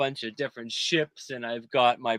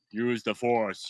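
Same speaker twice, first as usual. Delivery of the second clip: voice run through an electronic voice-changing module; 3 semitones lower, 3 dB quieter than usual. Retelling scaring kids in a Halloween maze: Darth Vader voice. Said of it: "I had the voice module and everything".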